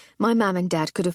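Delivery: ordinary delivery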